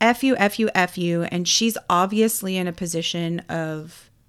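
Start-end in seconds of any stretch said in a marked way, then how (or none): none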